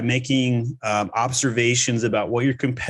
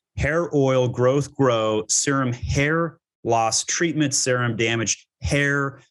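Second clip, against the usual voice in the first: heavy stress on every "hair". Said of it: "I emphasized the word hair three times".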